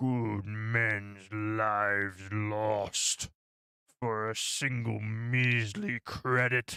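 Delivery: very low, deep, dropped bass put-on voice. Speaking to chat, repeating a quote in a very low voice. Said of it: "It's very hard to go that low".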